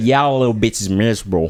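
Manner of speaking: bad put-on American accent. Reading out a woman's message to friends: bad American accent. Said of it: "That was a bad American accent".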